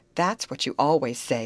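plain

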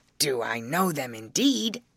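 ordinary talk

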